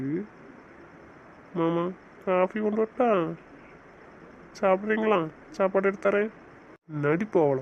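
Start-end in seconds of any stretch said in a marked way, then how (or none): 1.6-6.3 acted meek, dutiful, sweet-talking high voice. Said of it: "அப்படியே பவ்யமா மூஞ்சி வச்சுக்கிட்டு".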